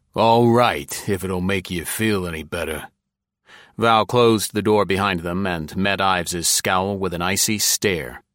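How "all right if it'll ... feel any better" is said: rough, gruff voice. A homicide lieutenant, after hesitating, agrees to step aside; gruff. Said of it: "and then said gruffly".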